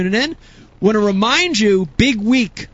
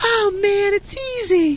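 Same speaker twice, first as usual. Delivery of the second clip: much higher, laid-back dude voice, pitched way up. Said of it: "He has that high-pitched voice".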